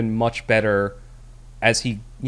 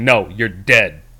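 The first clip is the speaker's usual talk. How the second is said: loud, slow, blunt deadpan delivery. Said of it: "the fucking Chad pragmatist walks in the room, just like".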